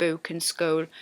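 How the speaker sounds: accent from Sunderland. Comparing two similar accents, demonstrating words in a softer Sunderland accent. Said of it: "the Sunderland accent's a little bit softer".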